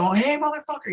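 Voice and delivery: shrill, very high-pitched screaming and hollering. Retelling screaming at a driver from a balcony: imitating own screaming. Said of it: "I start screaming at him".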